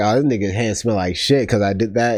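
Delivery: plain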